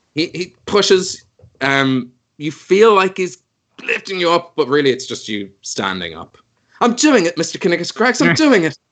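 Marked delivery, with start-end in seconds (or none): 6.8-8.7 put-on fantasy English accent, high, fast. Player voicing a character in a role-play scene, fantasy English accent. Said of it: "there's just something so tempting about doing fantasy English accents".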